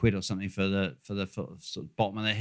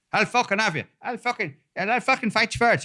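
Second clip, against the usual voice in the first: very high, loud, shouted, spoiling for a fight; 14 semitones higher, 5 dB louder than usual. Describing bare-knuckle fights to another speaker, doing a Brad Pitt impression. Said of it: "That was my Brad Pitt impression".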